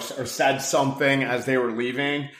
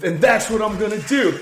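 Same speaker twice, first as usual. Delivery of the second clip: mock high-pitched scolding yell in a man's voice; 8 semitones higher, 4 dB louder than usual. Retelling a TikTok of a man practicing telling off his wife, imitating him yelling. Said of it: "he's like yelling at his wife".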